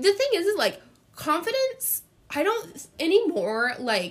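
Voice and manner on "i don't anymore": voice cracking, much higher, slower. Talking about confidence, the speaker's voice suddenly cracks: voice cracking. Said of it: "oh, my voice just cracked".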